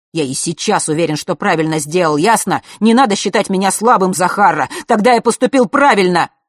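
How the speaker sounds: very loud, flaring outburst that boils over. Fesh answers his sister Zakharra's ironic question, suddenly flaring up. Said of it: "И вдруг вскипел".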